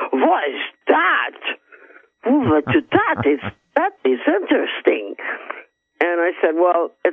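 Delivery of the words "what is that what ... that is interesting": put-on Russian accent, musing aloud, slow and swooping. Retelling what a man said on seeing a radar detector, in put-on Russian accent. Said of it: "He's Russian accent".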